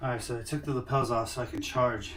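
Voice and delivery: ordinary talk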